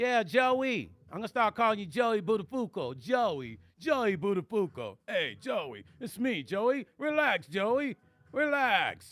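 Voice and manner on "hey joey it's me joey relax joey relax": put-on old-school comedian voice, drawn-out patter. Teasing a chat member named Joey: Rodney Dangerfield voice. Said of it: "why did I sound like that one?".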